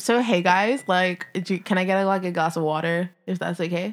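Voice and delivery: put-on general American accent throughout. Showing off accents on request, American accent. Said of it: "American accent".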